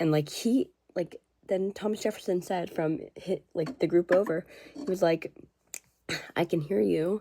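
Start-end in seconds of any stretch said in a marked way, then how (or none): 6.4-7.2 mock timid, shy, bashful, self-conscious delivery. Retelling a remark called over from a nearby group: imitating someone speaking shyly. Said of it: "in a shy way".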